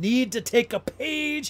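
full-volume, very loud, rising, drawn-out yell. Reading out a line written in all caps, shouted. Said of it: "I yelled it because she has it in all caps".

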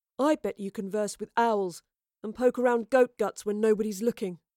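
ordinary delivery

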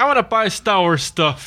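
normal talking voice

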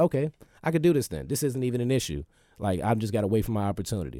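ordinary talk

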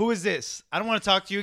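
put-on angry female voice. Retelling a movie scene where a woman gets on the phone: imitating an angry woman. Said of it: "and she gets angry".

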